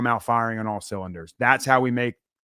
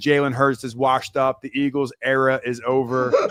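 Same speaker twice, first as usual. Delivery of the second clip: ordinary talk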